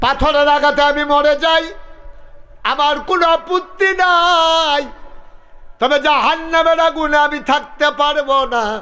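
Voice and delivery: high, loud, shouted pleading voice.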